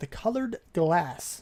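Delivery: slow, careful, deliberate, drawn-out delivery. Explaining a design on a recording after earlier flubs: saying it slowly. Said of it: "I'm saying that so slowly".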